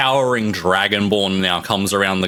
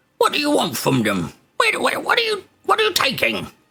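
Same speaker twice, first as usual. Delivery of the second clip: put-on goblin guard voice, much higher pitch. Narrator voicing a dungeon guard questioning the party, goblin guard voice. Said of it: "And the other one has sort of like the top quarter of his face is sort of all scarred, and he's missing his eye sort of thing from that sort of damage. / And the other one has sort of like the top qua".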